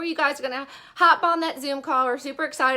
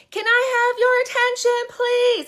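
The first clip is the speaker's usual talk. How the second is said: high-pitched, loud yell, calling out; 10 semitones higher, 4 dB louder than usual. Speaker pretending to grab everyone's attention at a party at once, yelling. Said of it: "I'm going to yell".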